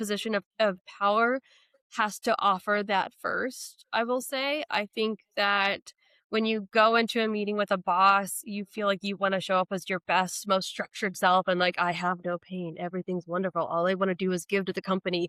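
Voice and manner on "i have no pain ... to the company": flat, mechanical, corporate robot monotone. Acting out an employee in a meeting with a boss: imitating a robotic delivery. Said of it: "in this very, like, robotic".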